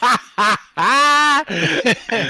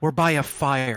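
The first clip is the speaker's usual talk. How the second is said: hushed, acted, half-whispered stage whisper; 9 semitones lower, 8 dB quieter than usual. Half-whispering back to a party member while sneaking: half-whispering back in character. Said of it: "And I whisper back".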